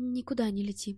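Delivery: ordinary delivery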